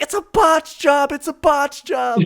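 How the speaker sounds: very high, very loud, shrill, drawn-out screaming. Retelling a story where the dad runs into the bathroom screaming: imitating a father screaming.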